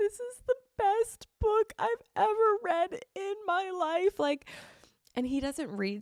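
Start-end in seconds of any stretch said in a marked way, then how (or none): 0.0-4.2 acted sobbing voice, higher. Retelling finishing a book in tears: retelling own sobbing speech. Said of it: "I'm, like, hysterically sobbing".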